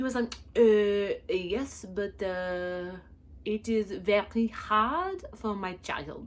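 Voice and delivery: bad fake French accent, mock-angry. Imitating a random angry Frenchman making his demands, terrible fake French accent, mock-angry. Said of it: "Please forgive my terrible accent ... a random angry Frenchman, and his demands".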